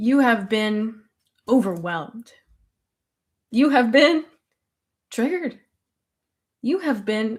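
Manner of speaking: giggling and laughing while talking. Welcoming viewers on a live stream, laughing while talking. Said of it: "I'm cracking up".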